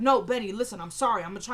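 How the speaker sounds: plain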